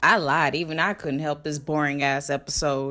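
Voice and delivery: deep, low, flat mock voiceover.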